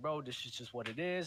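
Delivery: ordinary talk, nothing marked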